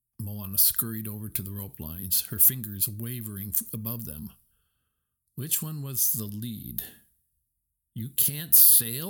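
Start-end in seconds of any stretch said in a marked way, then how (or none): 7.9-9.1 incredulous, disbelieving, can't-believe-it tone. Watching Moana fumble with the rope lines, Maui asks, incredulous. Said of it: "Maui asked incredulously".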